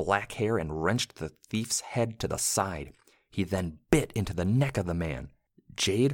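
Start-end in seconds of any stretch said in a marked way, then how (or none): none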